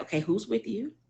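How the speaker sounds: steady, unhurried, calm, soft voice. Retelling a best friend's reply on the phone: imitating Tamika's calm voice. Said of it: "And she was so calm".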